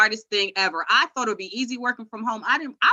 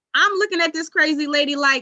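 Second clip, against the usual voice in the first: usual speaking voice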